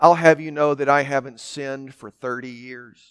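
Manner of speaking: mock-condescending tone. Telling of a woman who came up to a preacher after a sermon, mimicking a condescending tone. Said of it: "in this condescending tone".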